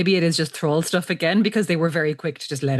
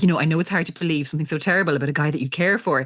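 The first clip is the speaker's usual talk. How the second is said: mock condescending, patronizing older-sister voice. Retelling a sister explaining gently: imitating a condescending big sister. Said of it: "really condescending big sister, uh, tone of voice".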